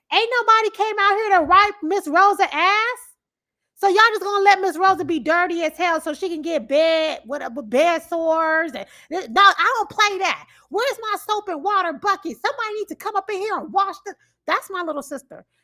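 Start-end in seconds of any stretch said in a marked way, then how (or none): 0.1-14.1 mock, very loud, high-pitched, indignant rant. Speaker quoting their little sister calling out at her work: imitating sister talking very loud. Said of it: "She will say very loud".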